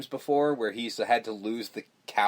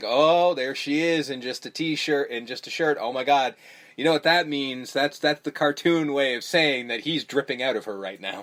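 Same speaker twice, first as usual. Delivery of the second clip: ordinary talk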